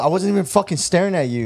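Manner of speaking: high, mild half-yell, yelling back. Retelling a girl's reply in an argument with the speaker's girl, retelling a yell. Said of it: "they're kind of like yelling at each other".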